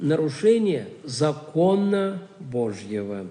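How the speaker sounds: закона stressed, slow and deliberate. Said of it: "делаю акцент на слове «закона»".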